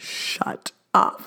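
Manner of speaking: mock mutter under the breath. Recalling seeing a pink onesie in a gift, the speaker re-enacts their reaction, retelling a mutter under breath. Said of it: "under my breath".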